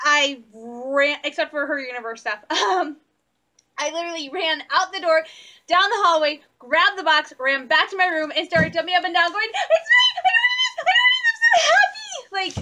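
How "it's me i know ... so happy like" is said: very high, slow, squeaky voice. Retelling jumping up and down after grabbing the box, in Minnie Mouse voice. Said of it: "my Minnie Mouse voice that annoys my mom".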